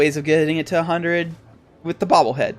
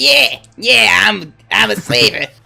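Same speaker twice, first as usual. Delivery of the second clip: mocking imitated voice, higher and louder; 7 semitones higher, 8 dB louder than usual. Imitating a game character's voice for the others: imitating the slaver's voice. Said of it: "his voice. This guy's voice is like".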